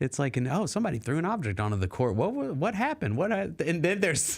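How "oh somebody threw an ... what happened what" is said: put-on happy-go-lucky, breezy, swooping commentator voice. Imitating game commentators reacting to an object thrown on the court: imitating happy-go-lucky commentators. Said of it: "it's very, like, happy-go-lucky".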